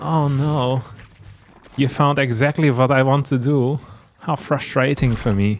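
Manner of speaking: put-on, fake German accent. A game commentator pretending the opponent's scout found his plan, fake german accent. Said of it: "it's important to use a German accent".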